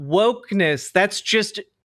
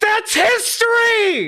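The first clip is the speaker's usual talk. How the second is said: very high-pitched, angry, mad blurted outburst; 14 semitones higher than usual. Reacting to a claim that history lessons were replaced: mad. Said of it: "I'm so mad right now!".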